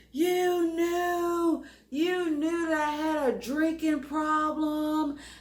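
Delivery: furious, high, acted-out yelling, "knew" drawn out. Retelling how he screamed at the speaker in the truck, retelling an angry scream. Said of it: "he's screaming at me".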